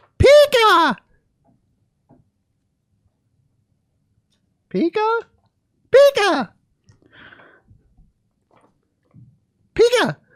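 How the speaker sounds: very high creature cries, each stretched, swooping up high. Reading the Pikachu part in a park bench scene: Pikachu voice. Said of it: "Pikachu sits at their feet".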